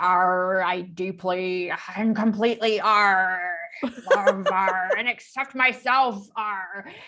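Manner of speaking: put-on pirate voice with arrs tacked on. Showing how the family does the tapping as pirates, pirate voice. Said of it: "pirate tapping".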